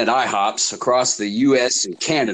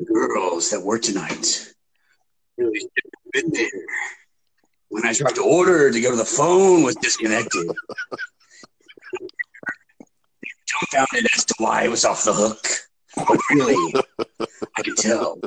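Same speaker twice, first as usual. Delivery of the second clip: mock-dramatic, theatrical put-on performance. Reading aloud to John what this guy wrote, mock-dramatic reading. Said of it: "Dramatic acting".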